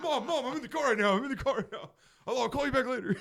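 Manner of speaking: very loud, very high, hurried and flustered. Retelling a friend's reply when his mom called on speaker: imitating a flustered friend on a call. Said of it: "And then just".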